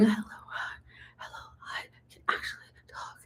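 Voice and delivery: very soft hushed whisper, barely any voice. Retelling own first words after ripped vocal cords: imitating own past whisper. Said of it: "I started whispering".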